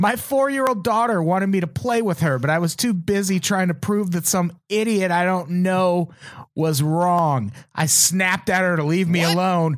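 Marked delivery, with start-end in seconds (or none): none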